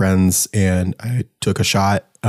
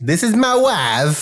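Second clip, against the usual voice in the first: very high-pitched comic character voice; 10 semitones higher than usual. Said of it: "if you don't do Borat back".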